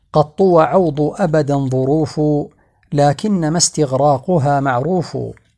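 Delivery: normal talking voice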